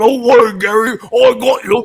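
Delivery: very high-pitched, very loud cartoon character voice. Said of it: "he's like".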